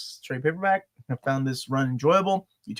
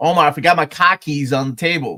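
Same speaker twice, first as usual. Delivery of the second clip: loud, raised-voice put-on Boston accent; 2 semitones higher, 9 dB louder than usual. Retelling how a friend from Boston talked: imitating a Boston accent. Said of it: "he's from Boston, so everything was like".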